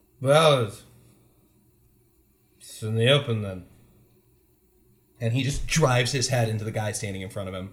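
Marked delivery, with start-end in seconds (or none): 0.2-3.6 put-on drunk, loud, slow, slurring words. Voicing a character in a group game just before he headbutts someone, drunkenly. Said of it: "he just sort of drunkenly".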